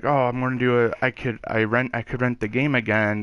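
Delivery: ordinary delivery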